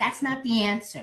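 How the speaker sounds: put-on fed-up, irritated, really aggravated tone. Retelling a phone call about a food order: imitating own aggravated tone. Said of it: "now I'm getting really aggravated".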